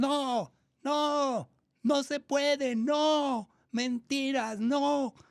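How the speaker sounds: mock very high, very slow, strident old woman shout. Retelling how an elderly woman in the audience interrupted: imitating an old woman shouting. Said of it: "empieza a gritar".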